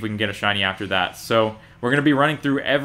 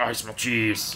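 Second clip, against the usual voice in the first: put-on muttering creature voice, quieter; 6 dB quieter than usual. Imitating a Pokemon's cry that sounds like someone muttering: Grapploct cry, muttering. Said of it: "sounds like someone muttering under their voice".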